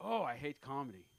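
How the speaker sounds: put-on thick Ukrainian accent, laid on. Retelling what a woman he went on a date with said, thick Ukrainian accent. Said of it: "like with a thick Ukrainian accent".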